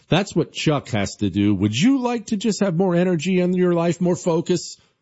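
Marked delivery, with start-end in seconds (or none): 1.5-4.7 high, fired-up voice. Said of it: "Do I sound fired up to you?".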